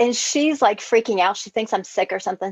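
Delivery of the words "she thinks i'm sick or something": ordinary talk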